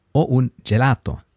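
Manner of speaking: ordinary talk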